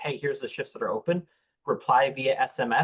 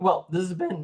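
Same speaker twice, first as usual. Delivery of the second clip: voice breaking mid-phrase, pitched up; 5 semitones higher than usual. Signing off a production episode, the host's voice cracks: voice cracking. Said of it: "I don't know where my voice went there".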